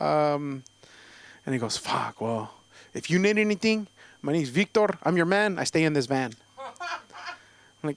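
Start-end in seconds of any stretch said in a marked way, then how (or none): 1.8-6.3 put-on Mexican-American street-style accent and delivery.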